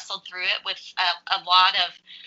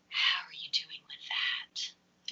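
slow, very quiet, hushed whisper; 3 semitones lower, 11 dB quieter than usual. Imitating how people asked about a son going off to college: imitating a hushed tone. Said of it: "it's this hushed tone of".

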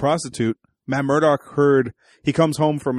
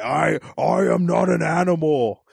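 very slow, rough, drawn-out, weird creaky voice; 2 semitones higher than usual. Comparing TV versions of a villain: Vincent D'Onofrio Kingpin voice. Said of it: "both interpretations of the Kingpin have a weird voice".

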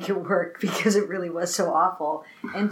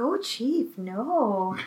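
very soft, fussy, fretting voice with drawn-out no; 3 semitones higher, 3 dB quieter than usual. Imitating a fussy movie assistant to Pulitzer: soft fussy voice. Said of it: "he's got a very soft voice".

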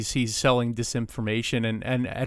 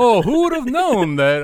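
put-on cartoon dad shouting, higher and louder; 10 semitones higher, 6 dB louder than usual. Retelling a Simpsons scene leaving the cinema: Homer Simpson shouting. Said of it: "at the top of his voice".

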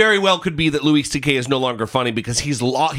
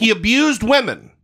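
high, raised shouting yell; 7 semitones higher than usual. Speaking up because the listeners can't hear well, yelling. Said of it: "stop yelling at me".

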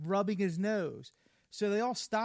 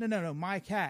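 ordinary delivery

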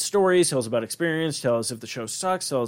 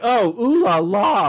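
mock heavily sarcastic, very slow, pitched-up drawl; 8 semitones higher, 7 dB louder than usual. Recounting a scene from a show, quoting a character's reply, mock-sarcastic. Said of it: "like so fucking sarcastically".

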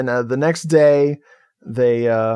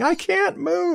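very high, piercing, desperate-sounding mock scream. Retelling a movie scene where a character falls, imitating a scream. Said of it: "she's just screaming".

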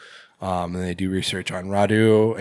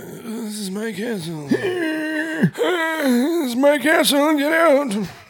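put-on very high, slow, drawn-out old-man voice. Retelling a movie scene, imitating Radu ordering them out: octogenarian voice. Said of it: "He sounds like an octogenarian".

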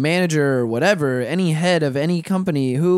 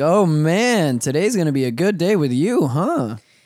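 ordinary talk, nothing marked

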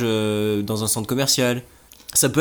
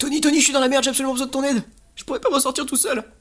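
panicked, desperate pleading; 14 semitones higher than usual. Begging Tony for help he can't do without; panicked plea. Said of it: "Pourquoi t'es en panique comme ça".

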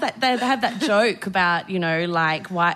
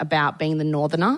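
normal talking voice

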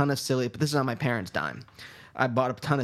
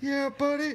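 very high, squeaky cartoon voice; 14 semitones higher than usual. Answering what a cartoon character's voice sounds like: Brak voice. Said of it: "Is it like that?".

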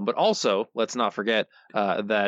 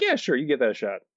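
plain

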